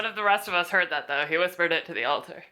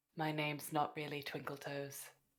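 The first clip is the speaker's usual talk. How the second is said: very soft, hushed, secret-sounding half-whisper; 3 semitones lower, 15 dB quieter than usual. A character telling a secret to the Altar of Secrets, half-whispering. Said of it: "I whisper".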